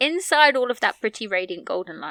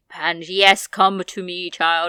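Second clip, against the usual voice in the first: deep, bellowing, regal voice, slow and drawn out; 3 semitones lower, 4 dB louder than usual. Imagining how a character talks, the speaker tries a Queen-like voice, bellowing and deep. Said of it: "a lot more bellowing and deep".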